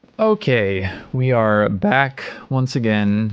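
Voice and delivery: slow voice cracking partway through. Returning from a break to the ranking list, with a voice crack. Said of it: "Nice voice crack".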